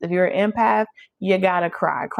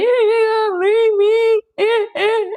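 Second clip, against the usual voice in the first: put-on sobbing, very high and dragged out; 5 dB louder than usual. Imitating a karmic partner crying at someone who stays: mock crying. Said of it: "Because they cry".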